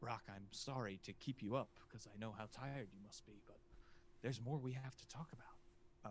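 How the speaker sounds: soft stage whisper, meant to be overheard. Voicing a distant figure who calls to a character: whispered. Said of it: "and it's whispered".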